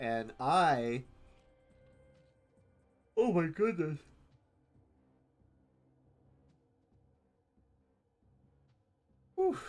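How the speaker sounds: out of breath. Commentator calling action-packed games: out of breath. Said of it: "I am out of breath".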